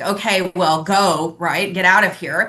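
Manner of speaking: slow, bored, dismissive brush-off tone. Retelling a border officer waving the speaker through: imitating a dismissive eye-rolling officer. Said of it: "rolled his eyes and just".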